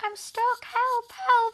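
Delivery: tiny, very high, squeaky little voice. Retelling how a man hid behind the door calling out, little voice. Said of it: "he'd be doing a little voice".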